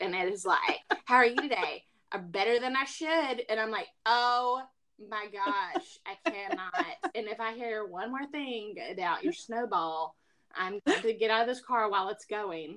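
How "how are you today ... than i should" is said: hammed-up, dumb, dopey put-on radio-host voice. Complaining about what plays in his car: mocking Dave Ramsey's dumb voice. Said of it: "his dumb voice".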